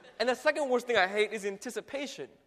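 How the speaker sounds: plain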